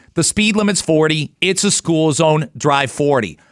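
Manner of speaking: ordinary talk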